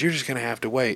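high, mock retort snapped back, cutting in. Retelling a woman's reply to a man about her car, snapping back. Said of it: "she snaps back at him and says".

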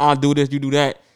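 normal talking voice

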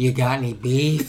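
hushed clown villain voice. Asked to give his best impersonation, Joker impression. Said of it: "give me your best impersonation".

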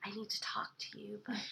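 hushed whispered voice.

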